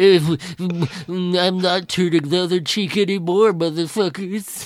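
put-on droopy cartoon-dog voice. Playing Jesus in a comedy bit, in a Droopy voice as Jesus. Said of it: "applied that droopy dog voice to a Jesus impression".

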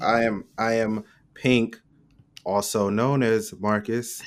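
mock robotic monotone voice. Introducing oneself jokingly: mock robotic voice. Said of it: "Mad robotic".

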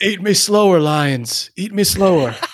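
sick, twisted, very high voice, slow and savoring. Joking about being eaten by lions, doing a Howard impression. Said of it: "I didn't know anybody had a Howard impression".

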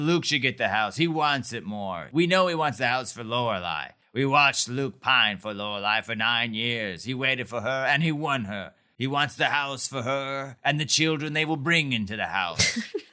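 grand, big-voiced, speech-making elder voice. Recapping a scene where a hooded man speaks before elders: booming voice. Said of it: "Dude's got this booming voice".

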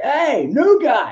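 mock, very high screamed call-out. Retelling how a pit reporter called out from behind: imitating someone screaming. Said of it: "he screams at me".

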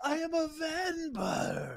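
high, slow, manic yelling.

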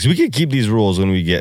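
voice cracking partway through. Discussing rules while counting through a list: voice cracking. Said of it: "You see my voice crack right there?".

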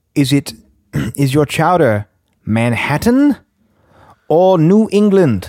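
put-on americanized posh British accent. Retelling a customer at the counter asking about chowder, in an american version of british. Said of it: "the most American version of British".

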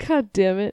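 laughing through a yawn. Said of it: "Is that a yawn laugh hybrid?".

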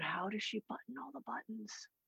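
put-on soft wondering child whisper.

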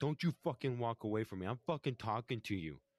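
angry yelling. Recounting an argument where one man stops another walking off, imitating Matt yelling. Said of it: "Matt's like yelling at him at this point".

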